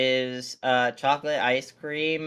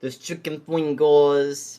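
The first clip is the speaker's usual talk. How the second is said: put-on loud New York Brooklyn accent; 5 dB louder than usual. Reading out a menu at the table: Brooklyn accent. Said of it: "I'm saying this in a Brooklyn accent".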